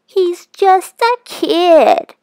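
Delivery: mocking falsetto squeak, loud and very slow. [name] mimics his friend Eddie's words back at him: mocking falsetto mimicry of Eddie. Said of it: "mimicked in a falsetto voice".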